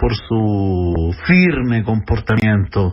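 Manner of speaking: slow, sarcastic, drawn-out ironic tone, "su" stretched. Lecturing on history, speaker adds a dig at the president, ironic. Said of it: "estoy siendo irónico".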